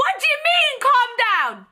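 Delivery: acted very high swooping scream, "calm" stretched long. Retelling her answer to a midwife telling her to calm down: imitating her own scream. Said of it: "I screamed it like that".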